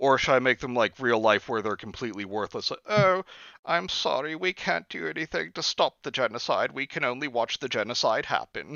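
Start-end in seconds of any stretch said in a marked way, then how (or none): 2.9-8.8 put-on mishmash of accents, mostly British-sounding. Imagining worthless real-life peacekeepers excusing themselves, in a British-sounding accent. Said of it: "Why did you sound British".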